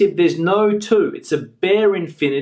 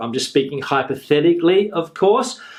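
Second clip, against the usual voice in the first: plain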